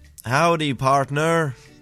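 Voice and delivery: bad put-on American accent. Asked to do an American, a bad put-on American accent. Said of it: "Do your American".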